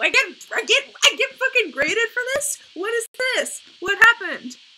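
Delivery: shrill, very loud, high shout. Reacting to a grade after finishing a date, shouting. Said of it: "I need to stop shouting".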